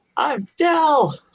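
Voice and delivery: put-on very high, awed little-kid voice full of wonder. On a swing, answering an introduction, in a childlike wonder voice. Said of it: "but in a childlike wonder voice".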